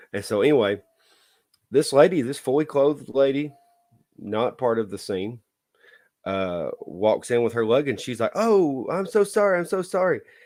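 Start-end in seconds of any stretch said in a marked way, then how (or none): 8.3-10.1 put-on, panicky, very high squeal. Recounting a clothed lady walking in on a film scene: retelling a scream. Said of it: "And she's screaming".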